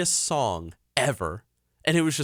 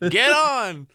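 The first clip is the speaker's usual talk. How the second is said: mock, very high, loud shrieked scream; 9 semitones higher, 5 dB louder than usual. Retelling screaming at a dog to get on the ark: retelling own screaming. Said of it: "screaming at my dog to get on the ark".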